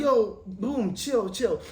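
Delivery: put-on soft, slow, American-tinged accent. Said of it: "Carl's like".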